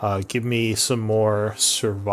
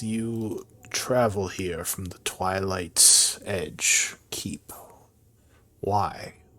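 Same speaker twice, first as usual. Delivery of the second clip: cavernous voice echoing back like a deep cave; 3 dB quieter than usual. Game narrator voicing a figure responding to the players: echoing voice from a deep cave. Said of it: "it sounds like someone speaking at the back of a deep cave as his voice kind of echoes".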